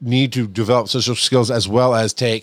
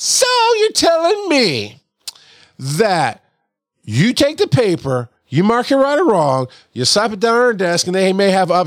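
very high, swooping, condescending lecturing tone; 10 semitones higher, 3 dB louder than usual. A speaker shows the tone used to bring the knowledge hammer down: make-you-feel-stupid tone. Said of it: "you guys should know this tone of voice by now".

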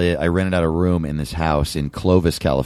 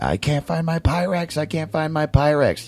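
mock frenzied, shrill, very high-pitched frantic screaming; 11 semitones higher than usual. Recounting a woman who came back in a frenzy, imitating someone screaming frantically. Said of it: "just screaming".

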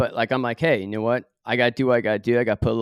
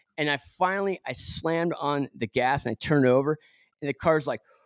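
ordinary talk

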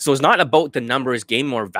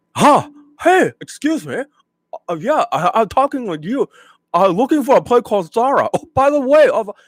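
mock caricature Chinese accent, higher and louder; 11 semitones higher, 4 dB louder than usual. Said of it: "you're talking like a".

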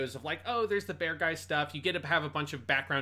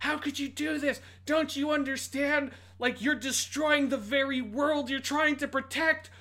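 over-the-top scream at a very high pitch; 11 semitones higher than usual. Recapping a scene where Riku screams at her, retelling Riku screaming. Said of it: "Riku's screaming at her like".

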